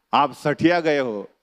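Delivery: ordinary talk, nothing marked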